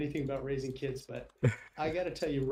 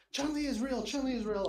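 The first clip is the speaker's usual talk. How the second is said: put-on teenage boy scream, higher; 10 semitones higher than usual. Retelling the boy on the phone: imitating a teenage boy screaming. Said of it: "a teenage boy screaming in the background".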